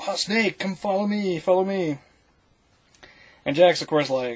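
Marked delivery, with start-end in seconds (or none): 0.0-2.0 play-acted calling out in a high, pitched-up yell. Retelling a scene where a friend yells from a truck: imitating someone yelling. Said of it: "Wong starts yelling at him".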